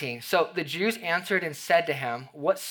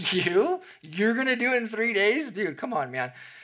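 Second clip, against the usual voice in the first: mocking, pitched-up, incredulous disbelief; 6 semitones higher than usual. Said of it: "maybe even mockingly".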